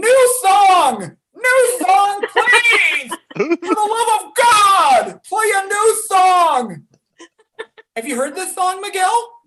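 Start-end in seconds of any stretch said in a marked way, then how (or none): 0.0-6.8 very slow, loud, dragged-out yell. Retelling how they yelled at the screen during a movie: imitating own yelling. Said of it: "I kept on yelling at the screen".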